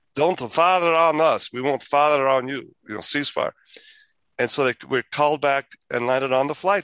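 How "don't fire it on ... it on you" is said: put-on heavy, thick German accent. Retelling a witnessed radio communication, the speaker quotes it in a heavy German accent. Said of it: "This was in heavy German accents".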